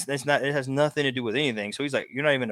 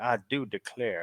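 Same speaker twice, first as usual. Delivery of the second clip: put-on, soft old Southern man's voice and accent; 3 semitones lower, 5 dB quieter than usual. Explaining what Esau is declaring, doing an old Southern man voice. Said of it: "it's like the old Southern man".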